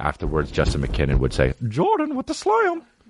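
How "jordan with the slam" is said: very high, announcer-style sports call. Imitate Justin McKinnon calling out a Michael Jordan slam dunk during the Bulls game, in Justin McKinnon's high-pitched voice. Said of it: "He would do it in a high pitched voice".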